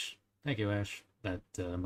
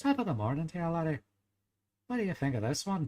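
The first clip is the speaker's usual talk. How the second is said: pitched-up, high Irish accent; 9 semitones higher, 3 dB louder than usual. Speaker explaining their go-to accent lines, Jacksepticeye-style Irish accent. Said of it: "going into an Irish accent, I always go".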